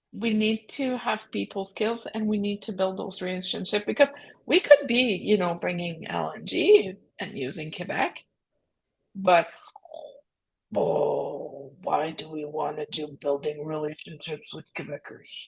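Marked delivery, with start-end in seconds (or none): 10.7-15.2 low, soft Albertan voice with a growl. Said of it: "Was that your Albertan voice there?".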